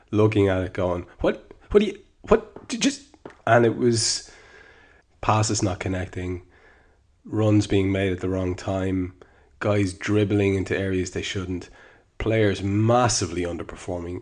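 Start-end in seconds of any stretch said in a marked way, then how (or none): 1.2-3.0 high, strained, frustrated splutter. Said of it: "a model of frustration".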